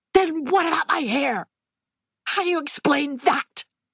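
screamed, shrill shriek. Reading a story aloud, the daughter demands an answer about her hair: screaming.

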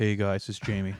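put-on deep relaxed podcast voice. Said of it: "kinda low and boomy and relaxed".

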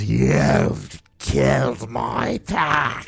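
slow, rough, snarled monster voice. Voicing the giant gnoll as she confronts the party, in a snarling gnoll voice. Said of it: "immediately snarls and says".

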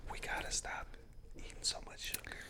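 mock very soft unvoiced podcast-style whisper.

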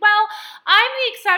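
high, loud mock listener voice. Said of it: "some of y'all are gonna be like".

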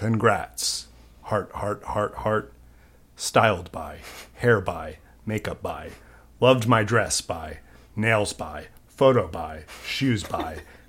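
very quiet, low, hushed, dead-serious dramatic reading. Continuing to read the Barbie premiere post aloud as an actor, Michael Shannon dramatic reading. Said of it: "Michael Shannon dramatic reading".

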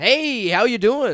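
laid-back, slow and loud. Imitating Chris Hansen walking in and greeting someone: Chris Hansen acting all cool. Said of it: "Acts all cool".

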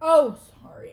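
loud insincere tone. Correcting a line after being called out: insincere apology. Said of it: "that was so insincere".

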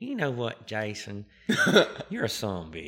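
booming, loud, swooping put-on Texas country twang. Quoting a country boy from Texas who calls back, Texas country twang. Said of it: "in his country of country twang".

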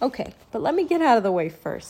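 plain

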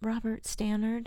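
timid, embarrassed tone. A boy still in shock is asked his full name and answers sheepishly. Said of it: "replied the boy sheepishly".

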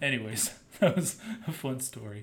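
dry, sarcastic, ironic throwaway tone. A podcast host wrapping up a personal story; sarcastic.

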